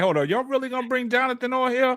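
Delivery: high, sniveling crying voice. Retelling a phone call where Bro Claw pleaded: imitating Bro Claw crying. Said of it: "he was crying".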